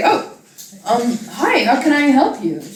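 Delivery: slow, startled, caught off guard, taken-aback delivery. Voicing the store lady greeting a tiny customer: taken aback shopkeeper. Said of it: "She appears to be kinda taken aback".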